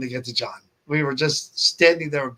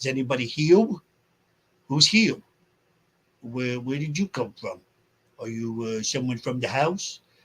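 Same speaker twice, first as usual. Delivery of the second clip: put-on Brooklyn accent, words doubled; 4 dB quieter than usual. Remembering a shy man everyone loved, imitating his Brooklyn accent. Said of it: "He had a Brooklyn accent, so everything was like".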